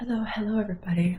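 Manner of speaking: hushed whisper. Greeting everybody while others are still asleep: whispering. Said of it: "I'm trying to whisper".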